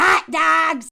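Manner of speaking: booming, loud Illinois accent, called out. Joking about a man from Illinois, in an Illinois accent. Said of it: "I'm not making fun of Illinois people".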